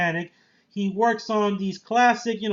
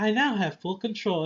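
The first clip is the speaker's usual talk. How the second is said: robotic, machine-like synthetic voice; 3 dB quieter than usual. Describing a film's AI that the hero hears in his head: Stem robotic voice. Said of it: "this Jarvis mixed with Hal from two thousand one".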